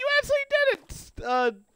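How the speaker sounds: put-on delighted excitement, very high and swooping. Retelling own reaction to someone's win, imitating own excited voice. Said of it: "I actually sounded so excited".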